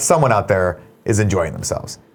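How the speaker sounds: plain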